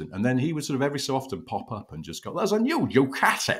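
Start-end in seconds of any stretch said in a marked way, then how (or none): 2.3-3.6 thick, chewed Lancashire vowels, very high pitch. Recalling how he would pop up on the bike coverage, the speaker quotes him: chewy Lancastrian accent. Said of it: "in a very chewy Lancastrian accent".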